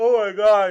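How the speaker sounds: spoken through a yawn, very high pitch, very loud. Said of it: "I'm so sorry for yawning".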